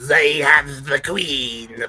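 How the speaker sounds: deliberately slow, stretched, drawn-out shout. Voicing a bee soldier alerting the others: shouting. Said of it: "kinda shouts out".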